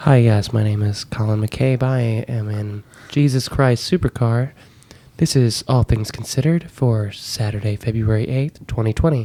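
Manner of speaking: very dry, deadpan, straight-faced public radio host voice. Showing the on-air bit, he introduces himself as if on air: deadpan NPR voice. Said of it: "very deadpan the entire time. Pretend you're on N P R".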